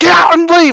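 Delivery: shrill, very high angry yell. Retelling a visit where he finally yells at the speaker: imitating someone yelling. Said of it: "So finally he yells at me and he goes".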